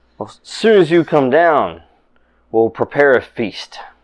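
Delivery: cheerful lord character voice. Voicing Lord Arthur greeting the party after their feat: voicing Lord Arthur, happy. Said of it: "he looks up and goes".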